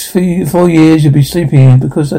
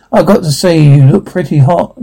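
plain

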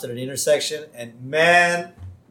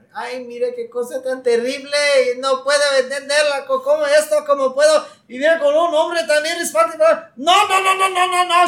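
mock woman's yelling, acted out, slower pace; 12 semitones higher, 4 dB louder than usual. Retelling a story where a man's wife yells at him, imitating a woman yelling. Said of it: "she starts yelling at him".

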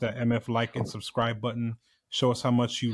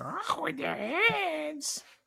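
pitch swoops up high, "hands" drawn out; 4 dB quieter than usual. Joking about a revolution scene, doing a Daffy Duck voice. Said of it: "Daffy Duck".

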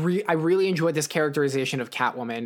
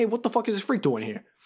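put-on broadest possible thick New York accent, pitched up; 6 semitones higher than usual. Speaker retells a movie moment as Batman reaches the line: thick New York accent. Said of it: "with the most New York of New York accents".

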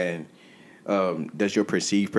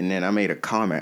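normal talking voice

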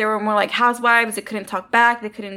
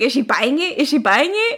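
mock speech broken up by laughter; 3 semitones higher than usual. Describing a film scene, the speaker retells the bad guy's line, imitating someone laughing while talking. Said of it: "and he's like laughing".

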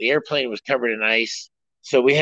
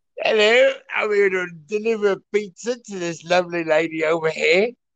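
put-on upper-crust posh British gentleman accent, pitched up; 6 semitones higher than usual. Pretending to be a porn character delivering a pizza, wealthy british fellow voice. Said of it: "I would pretend to be a wealthy British fellow".

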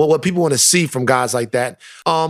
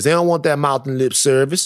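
put-on southern Louisiana accent, faster pace. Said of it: "when you tried to imitate [name]".

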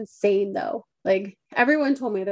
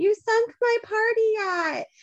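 put-on very high, slow, drawn-out drunken scream; 11 semitones higher than usual. Imagining a boat owner after a car crash: mock drunk screaming. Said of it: "some drunk dude on the boat screaming".

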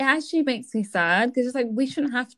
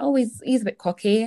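put-on Cockney accent slipped in. Quoting a remark people make about a man, in a put-on cockney accent. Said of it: "I don't know why I put a cockney accent on when I did that".

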